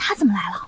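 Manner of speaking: soft, hushed whisper. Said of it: "嘘，小声点儿".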